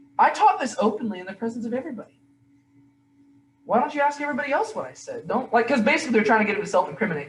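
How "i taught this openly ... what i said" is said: lightly sarcastic, pitched-up tone. Retelling Jesus answering questioners at his trial: imitating Jesus being sarcastic. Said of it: "Jesus is gonna be a little bit sarcastic".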